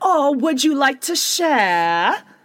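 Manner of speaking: bad put-on British accent. Retelling how Jenny answers when Heather offers champagne, in a bad British accent. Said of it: "She tries to do her British accent again".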